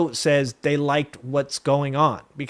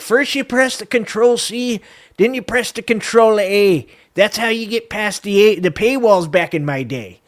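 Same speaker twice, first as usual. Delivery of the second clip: pitched-up, put-on old-timer voice; 6 semitones higher, 4 dB louder than usual. Joking about being old-fashioned with paywall tricks: put-on old man voice. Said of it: "I'm like an old man up here".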